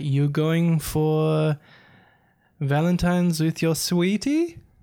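slow, badly done, put-on South African accent. Retelling what an Uber driver asked on the way over, in a failed accent impression. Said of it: "I've already failed in an accent".

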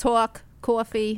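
put-on thick Long Island accent. Asked for Long Island words, showing a thick Long Island accent. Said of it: "is New York or Long Island?".

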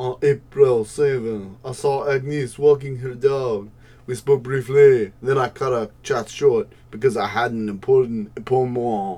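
loud put-on French accent drifting toward Jamaican. Asked to read a neighbor's statement aloud, the speaker reads it in a French accent. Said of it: "You're so much better at the French accent".

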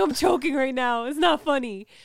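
on the verge of tears. Sister retells how her brother insisted he was choking, imitating him about to cry. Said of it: "He's like about to cry".

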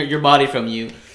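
ordinary delivery

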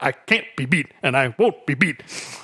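wooden, robotic, both halves said exactly alike. Retelling a TV interview line: imitating Mister T's robotic delivery. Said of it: "so robotic that it's natural".

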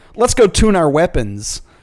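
plain

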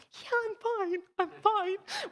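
weeping, tearful, very high and slow. Retelling own answer to people asking if all was well: retelling own tearful reply. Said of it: "with the tears streaming".

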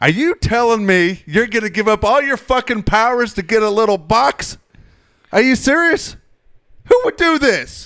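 very high, loud, yelled-out rant. Retelling what a man yelled out during a Superman screening, retelling his yell. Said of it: "And he yells out".

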